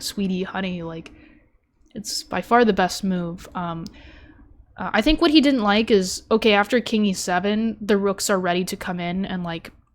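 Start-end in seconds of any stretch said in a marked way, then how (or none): none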